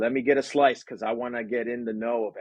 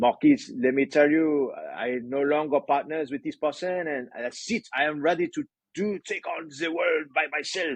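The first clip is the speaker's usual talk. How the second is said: deliberately bad, fake French accent; 4 semitones higher than usual. Retelling what a Montreal fashion company client said, in a horrible French accent. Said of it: "I'm going to do a horrible French accent here".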